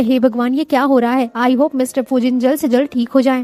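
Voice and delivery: ordinary talk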